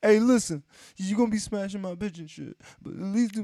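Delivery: shrill, high, loud, whiny, wailing sob-voice. Acting out a hypothetical phone call, in a mock-crying voice. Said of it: "doing the fucking crying bitch voice".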